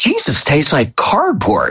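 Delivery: animated, sing-song delivery with high, swooping pitch. Retelling what a daughter said in a quiet church: imitating someone saying it loudly. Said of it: "she said very loudly".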